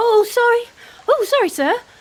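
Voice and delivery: sudden, very high, blurted-out sorry. Pretending to trip and bump into someone, then blurting out an apology. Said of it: "I'm gonna blurt out".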